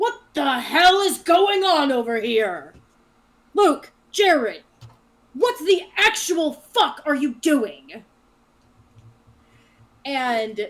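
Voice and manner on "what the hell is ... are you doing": very loud, booming, raised bellowing yell. A narrator voices the guard captain striding out of the tree line, booming. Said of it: "you hear the booming voice of the guard captain".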